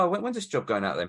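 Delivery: ordinary delivery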